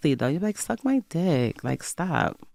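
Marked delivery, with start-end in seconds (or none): 0.6-1.6 gentle, sweet, nice-sounding delivery. Showing how to say a rude line in a soft girl era: said nicely. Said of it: "You say it nicely".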